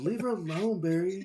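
mock whispering. Retelling a movie scene where a character confronts barry: imitating a whisper. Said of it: "He, like, whispers it to him".

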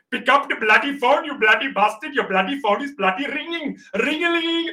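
high-pitched comedy put-on Indian accent. Recalling funny ringtones the speaker recorded, put-on Indian accent. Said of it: "I was doing like an Indian voice".

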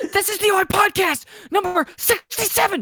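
very high-pitched, stretched-out, drawn-out scream. Suggesting someone open the podcast by screaming: mock scream. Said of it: "scream and go".

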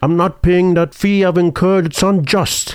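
put-on Scottish accent, high. Quoting a Celebrity Jeopardy line: fake Sean Connery voice. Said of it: "so fake Sean Connery".

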